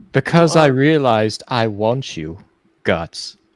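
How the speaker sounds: campy delivery.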